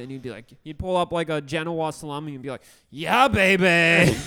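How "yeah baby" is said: put-on booming, belted out, with "baby" stretched long. Retelling how a coworker would hold up a salami and quote Austin Powers. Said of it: "he used to quote Austin Powers all the time".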